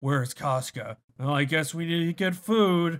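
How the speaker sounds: very grumbly voice throughout. Explaining that Guts never rages, only grumbles; grumbly Guts voice. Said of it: "just a very grumbly".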